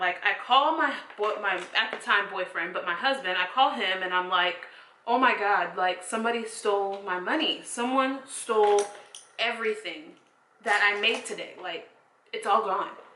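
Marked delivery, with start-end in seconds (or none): none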